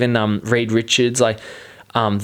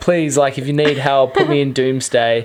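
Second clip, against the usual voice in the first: put-on begging, pleading voice, slower. Retelling a skit where an actor begs for a movie role, mock-pleading. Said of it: "he's sort of pleading to for a spot".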